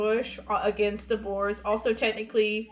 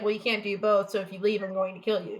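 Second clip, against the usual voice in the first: plain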